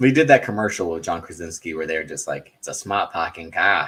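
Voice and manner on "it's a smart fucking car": exaggerated, heavy Boston accent. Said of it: "pick words that had the Boston accent".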